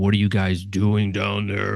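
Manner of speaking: imitated spooky voice. Retelling a stepfather calling down the basement stairs: imitating a spooky voice. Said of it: "It was this really spooky voice".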